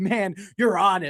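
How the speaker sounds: pumped-up, eager, fired-up, excited enthusiasm. Retelling what a caller said: imitating a fired-up caller. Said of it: "Like this".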